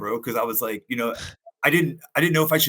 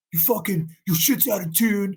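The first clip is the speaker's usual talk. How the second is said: mock mean yell, high and angry; 8 semitones higher than usual. Retell the first time he yelled at you, after you started jamming, imitating someone yelling at you. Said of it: "the first time Josh Wynn ever yelled at me".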